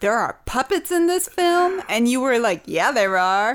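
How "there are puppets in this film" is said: furious, outraged, pitch climbing high. Retelling to the listener a question asked early in a film, acting full of rage. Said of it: "looked at you full of rage and said".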